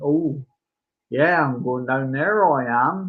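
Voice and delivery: put-on speaks with a Cornish accent. Retelling how a PC tried the local accent; Cornish accent. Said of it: "that sort of accent".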